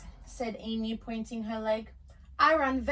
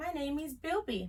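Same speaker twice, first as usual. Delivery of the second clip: soft, small, frightened voice; 4 semitones higher, 6 dB quieter than usual. Narrator reading a frightened little animal answering another animal: soft frightened voice. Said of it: "answered in a soft voice".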